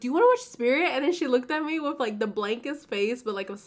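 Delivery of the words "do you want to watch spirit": mock can't-wait, bubbly, excited, eager delivery. Retelling asking a friend to watch a movie: imitating own excited question. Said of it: "I was so excited".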